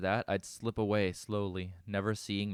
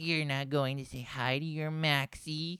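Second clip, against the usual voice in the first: taunting, mocking put-on baby voice, pitched high; 7 semitones higher than usual. Reading a story where an alien mocks a captive: mocking baby voice. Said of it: "putting on a baby voice".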